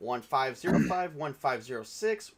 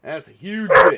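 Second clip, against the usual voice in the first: loud, slow, emphatic delivery. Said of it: "You gotta say it like that".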